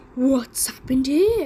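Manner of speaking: deep, growled voice. Narrator reading the three bears story aloud, voicing Father Bear's deep growl. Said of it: "growled Father Bear with his deep bear voice".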